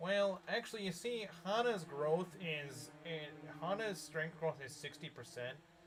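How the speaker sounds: weird, put-on, slow, drawn-out nerd voice. Asked about their stream voice, mimicking how certain people talk: imitating their weird nerd talk. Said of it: "this is the weird way they talk".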